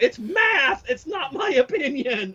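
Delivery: very high, slow, deliberate, drawn-out shouting. Retelling a work argument, imitating himself yelling. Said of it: "And I started yelling at him".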